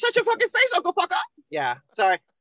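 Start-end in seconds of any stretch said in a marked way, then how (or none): 0.0-1.2 very high, loud cartoon voice. After saying they should have sounded like them, the speaker tries again: Terrance and Phillip impression. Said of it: "It's pretty good, actually".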